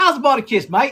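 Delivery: put-on Australian accent. Practicing an accent and asking whether it is passable, put-on Australian accent. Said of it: "I literally try to practice my Australian accent".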